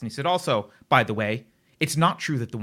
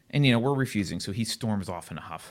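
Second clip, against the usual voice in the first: usual speaking voice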